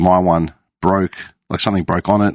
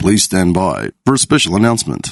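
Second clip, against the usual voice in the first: put-on, swooping public-address announcer voice. Describing doing stupid voices all day, showing one: stupid announcer voice. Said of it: "I know I can do that voice".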